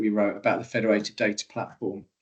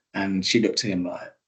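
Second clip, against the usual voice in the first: plain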